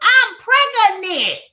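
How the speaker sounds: very high, shrill, top-of-the-lungs scream. Retelling someone walking into the lockup: imitating someone screaming at full volume. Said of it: "screaming to the top of your lungs".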